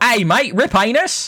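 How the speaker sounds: Australian accent. Showing how a greeting could sound, in an Australian accent. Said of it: "you could say it like this. ... you give it some Australian twang".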